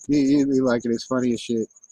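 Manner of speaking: ordinary delivery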